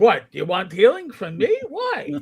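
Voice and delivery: New York accent with swooping pitch.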